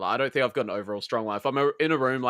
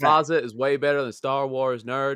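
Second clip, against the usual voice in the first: put-on American accent; 3 semitones higher, 4 dB louder than usual. Prompted by the others to say a line, the speaker uses an american accent. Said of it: "hear your American accent".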